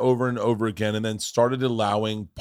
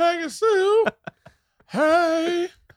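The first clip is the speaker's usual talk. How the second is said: cartoonish, over-the-top character voice, much higher. Praising a favorite movie, showing how a character talks in a cartoonish voice. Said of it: "He talks like this in the whole movie".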